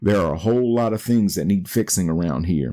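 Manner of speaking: ordinary talk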